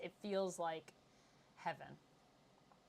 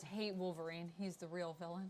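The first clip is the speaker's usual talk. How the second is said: normal talking voice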